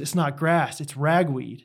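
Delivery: imitated snarky child voice. Retelling a story from a field, imitating a kid's correction: mock-snarky kid retort. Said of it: "some kid just like snarkily goes".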